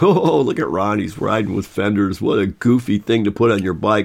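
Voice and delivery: put-on mocking tone with jeering laughter. Speaker recalls group riders laughing at his bike fenders, mimicking people mocking him. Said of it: "everyone laughing at me and going".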